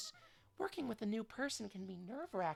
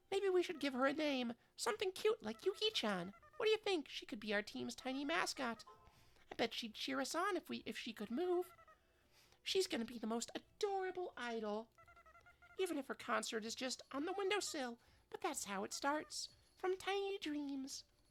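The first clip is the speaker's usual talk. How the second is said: put-on high girlish character voice; 3 semitones higher than usual. A character speaks to a teammate about their prototype, in a high-pitched voice. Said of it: "I'm doing like two high pitched voices".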